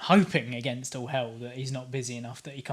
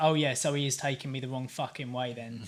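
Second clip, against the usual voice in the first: ordinary talk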